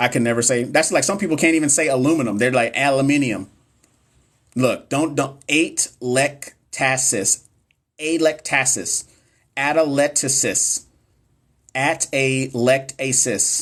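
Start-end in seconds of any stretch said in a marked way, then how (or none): 5.5-13.6 very slow, choppy, syllable-by-syllable robot voice. Struggling to pronounce a hard word aloud, saying it like a Speak & Spell. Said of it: "saying it like a speak and spell".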